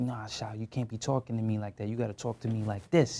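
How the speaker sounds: put-on New York accent, put on. Retelling how he was told to talk: imitating a New York accent. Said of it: "New York accent".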